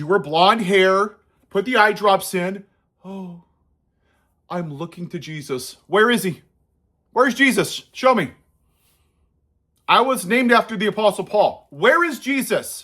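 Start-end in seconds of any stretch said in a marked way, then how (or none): 3.0-12.8 scornful, mocking put-on politician voice. Mocking the shtick of the woman being criticized: mocking monotone voice. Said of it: "talk in a monotone voice like Carrie Lake".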